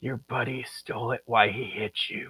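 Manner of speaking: very soft, hushed, secret whisper. Player's character sends him a secret magical message, whispering. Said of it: "whisper to him".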